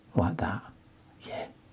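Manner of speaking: whispered voice. Dropping colour into a damp wash while painting, whispering. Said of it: "Why am I whispering?".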